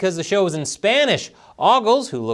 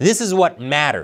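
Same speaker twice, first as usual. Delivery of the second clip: ordinary delivery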